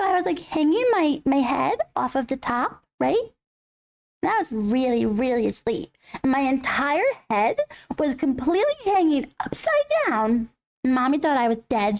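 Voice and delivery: small, adorable, cute little cat voice. Speaking as the pet cat to viewers: cute little cat voice. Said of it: "He has a cute little voice".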